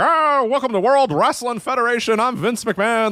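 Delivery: high, stiff, buttoned-up monotone. Imitating an early, buttoned-up era announcer: imitating monotone Vince McMahon. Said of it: "very monotone at times".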